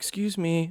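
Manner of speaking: extra polite, proper, courteous tone. Retelling how the girls spoke to a man passing in the aisle: imitating kids being super polite. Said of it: "super polite".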